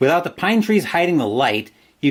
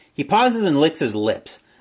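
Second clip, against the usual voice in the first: ordinary delivery, nothing marked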